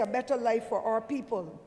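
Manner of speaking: normal talking voice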